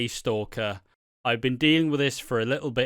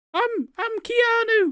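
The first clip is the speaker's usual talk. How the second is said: very high-pitched fake disguise voice. Mocking a hooded character who thinks nobody recognises him: imitating someone's fake voice. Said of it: "I'll just put on a fake voice".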